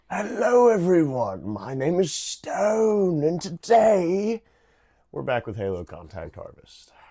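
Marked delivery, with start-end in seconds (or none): 0.1-4.4 pompous British accent, very high and loud, almost pirate. Host opening today's halo contact harvest episode in a pompous british accent, almost pirate. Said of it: "I'm really into this pompous ass British accent that's almost like a pirate".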